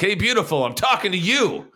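very high-pitched, hollered jock-style yell. Talking about a movie, the speaker pretends to be the quarterback guy: imitating a yelling quarterback. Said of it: "that quarterback guy who just yells like".

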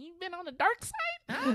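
very high, goofy, stupid-sounding put-on voice. A performer recounting how he opens a bit by questioning a woman, stupid goofy voice. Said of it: "I do a whole stupid voice saying".

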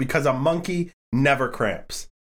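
put-on deadpan flat delivery. Retelling a ballplayer's answer to why bananas: imitating a deadpan answer. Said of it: "his deadpan answer".

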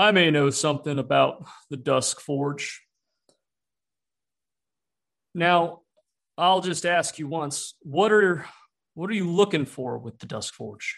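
slow, wary, probing, skeptical voice. Voicing a skeptical character questioning a traveler: skeptical NPC voice. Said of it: "looks at you with a little bit of skepticism and then goes".

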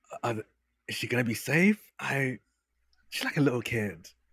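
quiet whisper in a put-on voice. Voicing a character asking another player if she'll be safe: whispering in character. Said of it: "just kinda whispers".

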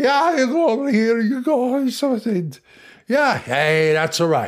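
put-on high, drunken voice. Speaker acts out the other brother, who is constantly drunk: drunk brother voice. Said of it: "the other brother is constantly drunk".

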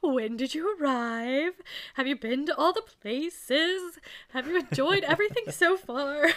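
way over-the-top, high-pitched sarcastic politeness. Retelling how a man asked Catherine polite questions, mimicking over-the-top sarcasm. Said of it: "he goes like way over the top sarcastic".

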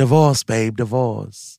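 loud, blunt, point-blank put-on voice. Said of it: "She's like".

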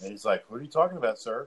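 ordinary talk

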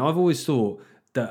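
ordinary talk, nothing marked

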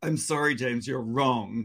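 low, sweet, passive-aggressive tone. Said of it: "That passive aggressive".

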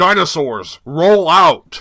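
loud robotic voice. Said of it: "like, Optimus Prime".

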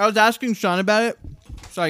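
speaking with mouth full of food. Co-host chatting with others about a guest's character voice, talking with mouth full. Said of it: "I got poke in my mouth".

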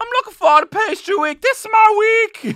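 put-on girly voice, very high, very loud. Talking to Jordan, the speaker mimics a woman: mimicking a woman's high-pitched voice. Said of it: "she has a high-pitched voice. That's the only thing that I'm mimicking".

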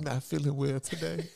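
put-on high-pitched drag-queen woman's voice. Retelling being checked out of school, playing the mother in a drag voice. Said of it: "I'm using my drag voice".

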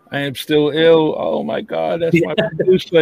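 high-pitched, excited, blurted-out gush. Retelling how the teenage cashier reacted on seeing the t-shirt, imitating an excited teenager. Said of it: "he's all excited".

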